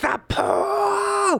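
put-on scream. Recounting to the listener how they gripped a man's arm: retelling a scream. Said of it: "and just screamed into his face".

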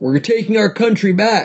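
acted out, very high, aggressive street yell. Recounting a man running through Times Square with others; imitating a man shouting. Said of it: "the guy was shouting".

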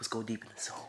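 little soft voice. Showing how someone could walk up to the microphone, little soft voice. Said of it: "with your like little soft voice".

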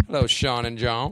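Cajun character voice. A guest in character greets the two hosts on the show; Cajun accent. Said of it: "Why are you always Cajun when you come on?".

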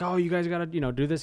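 mock yell, called out, rousing and urging. Describing a man at the Capitol barricades urging people on, retelling his yell. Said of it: "He's yelling like".

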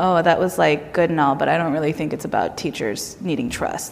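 condescending, dismissive, talking-down tone. Speaker retelling an administrator's reaction to their published piece, mock-condescending. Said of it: "very sort of condescendingly".

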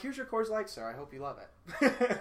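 mock, falsely friendly, fake cheerful service voice. Retelling handing over a drink after cursing: imitating a fake cheerful bartender. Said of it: "And I turn around, I'm like".

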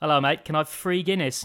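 English accent with th sounds turned to f. Showing the english pronunciation of th as f: english accent, th as f. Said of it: "Or the English pronunciation of a TH being an F".

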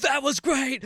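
so excited, high, thrilled cheer. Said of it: "Like, he was so excited".

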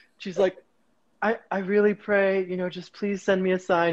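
ordinary talk

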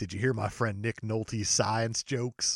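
hushed and slightly gruff voice. Doing an impression for the other speaker: Sam Elliott impression. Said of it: "It's a very similar impression".

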